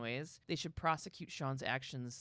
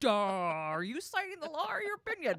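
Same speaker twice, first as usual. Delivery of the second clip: strange, very high-pitched, swooping line reading; 12 semitones higher, 7 dB louder than usual. Retelling a courtroom scene, quoting Gates: imitating Gates's weird line reading. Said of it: "it was fucking weird".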